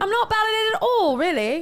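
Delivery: put-on English accent. Answering praise for a put-on accent: English accent. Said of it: "you're quite good".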